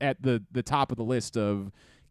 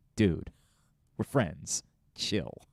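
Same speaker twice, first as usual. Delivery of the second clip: mock, mildly annoyed, dismissive delivery; 6 semitones lower, 4 dB quieter than usual. Imitating a friend who is annoyed by all the reverence: imitating Sansi sounding annoyed. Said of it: "she's almost annoyed by it".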